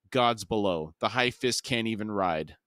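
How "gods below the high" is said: usual speaking voice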